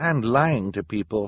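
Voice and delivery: plain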